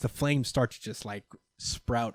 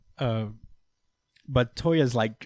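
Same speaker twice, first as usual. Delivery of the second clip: ordinary talk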